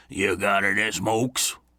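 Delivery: gruff, slow, rasping grizzly bear voice. Narrating a man who slid into the pew beside the narrator, in a raspy grizzly bear voice. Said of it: "in a grizzly bear's voice he rasped".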